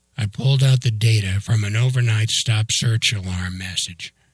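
plain

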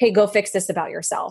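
ordinary delivery

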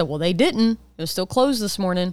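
usual speaking voice

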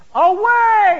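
very loud, very high-pitched shouted outcry. Showing the only proper way to read the word awake: cried out loud. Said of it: "he cries out with a loud voice. That's the only way it can properly be read. It's something like this".

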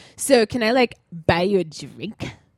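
put-on dude-bro voice, slow and stretched out. Retelling a guy at a singles party asking to buy a drink: imitating a dude bro. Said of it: "this is how he's talking".

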